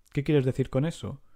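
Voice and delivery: ordinary delivery, nothing marked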